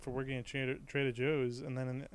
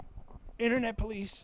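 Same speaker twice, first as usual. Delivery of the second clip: mock offended outrage, very high and loud. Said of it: "try to do that voice".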